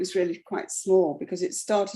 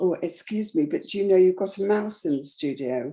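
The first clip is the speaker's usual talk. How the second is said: quiet, soft put-on voice. Retelling what a visitor's husband said at the open house: imitating someone speaking quietly. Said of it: "the husband saying really quietly".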